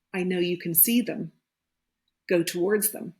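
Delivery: ordinary talk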